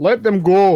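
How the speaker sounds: full-volume, very loud, high yell. Voicing a character telling the party to let enemies go: yelling in character. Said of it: "Jarl yells".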